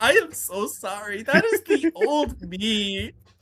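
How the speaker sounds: very slow, high, almost-crying voice, acted. Retelling how a character apologizes after coming back to his senses: imitating someone near tears. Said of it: "in tears almost".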